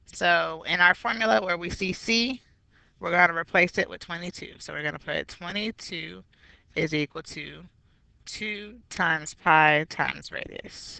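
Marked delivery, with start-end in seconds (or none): 8.2-11.0 slow, each "times" heavily stressed. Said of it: "notice I emphasize the word times".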